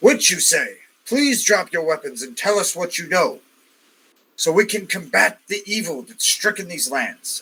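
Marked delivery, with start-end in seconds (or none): 1.0-7.4 lofty, very noble, heroic tone. A game player speaking in character to convince someone, noble voice. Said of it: "so very noble".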